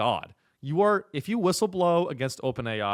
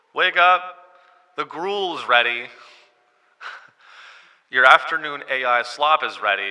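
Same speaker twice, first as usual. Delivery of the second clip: louder high school principal announcer-style voice; 7 dB louder than usual. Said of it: "this is like a high school principal voice".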